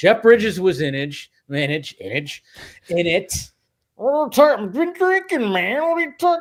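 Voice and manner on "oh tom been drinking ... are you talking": put-on voice, pitched very high. Talking about a movie's cast, doing a Jeff Bridges impression. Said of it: "that's my Jeff Bridges impression".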